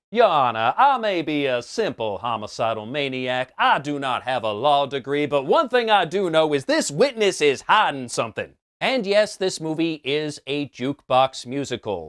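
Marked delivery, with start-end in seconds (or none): 0.1-8.5 put-on Southern lawyer drawl. Imagining Joker addressing the judge in court, doing Joker with a Southern drawl. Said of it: "he adopts a Southern drawl".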